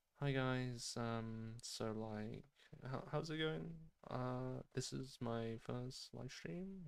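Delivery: hesitant, unclear, soft and nervous mumbling. Showing what mumbling sounds like in a nervous first speech: mumbling nervously. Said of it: "I might mumble".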